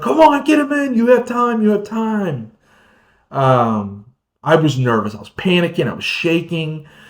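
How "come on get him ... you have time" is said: play-acted shrill, very high-pitched shouting. Retelling what others shouted during a timed catch: imitating people yelling. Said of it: "they're yelling at me like".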